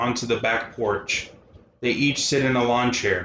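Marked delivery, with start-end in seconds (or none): none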